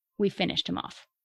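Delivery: ordinary delivery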